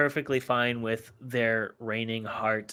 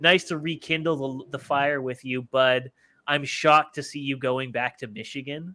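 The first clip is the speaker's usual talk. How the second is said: dry, mocking, sarcastic delivery; 3 semitones higher than usual. Retelling what a man wrote in a reply tweet, mock-sarcastic.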